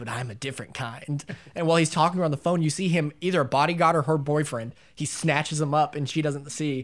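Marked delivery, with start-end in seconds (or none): 0.0-1.2 very hushed, near-silent slasher-villain voice. Retelling a film scene where the killer talks on the phone; Ghostface voice. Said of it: "he comes in the fucking Ghostface voice".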